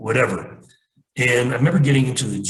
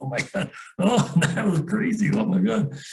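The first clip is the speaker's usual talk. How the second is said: put-on very high, drunk, laughing through the words; 11 semitones higher than usual. Retelling crawling out of a crashed Jeep drunk: imitating own drunk laughing. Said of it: "I'm drunk. I'm laughing".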